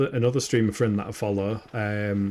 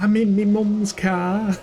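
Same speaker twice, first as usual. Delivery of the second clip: put-on very high, slow Scouse accent; 10 semitones higher, 5 dB louder than usual. Quoting a clip that someone in chat keeps referencing: Scouser accent. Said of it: "sounds kinda like a Scouser accent".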